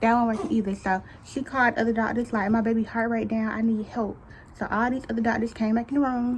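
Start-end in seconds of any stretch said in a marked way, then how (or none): none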